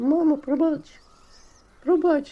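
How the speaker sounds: hysterical shriek, very high and very loud. Narrator reads the patient throwing himself at Ivanko's feet, screaming hysterically. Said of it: "почав кричати".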